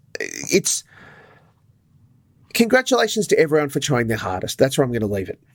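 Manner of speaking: openly irritated, pissed off, done-with-it annoyed tone. Speaker wrapping up a discussion, sounding pissed off. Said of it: "You sound very pissed off".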